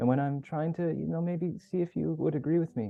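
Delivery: tentative, uncertain tone rising upward. Speaker showing how the voice sounds when seeking agreement: rising upward tone. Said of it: "it kind of goes up".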